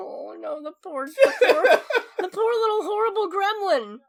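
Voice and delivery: put-on very high, teary crying voice. Retelling their own reaction while watching a film: imitating own teary reaction. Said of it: "I started tearing up a little bit".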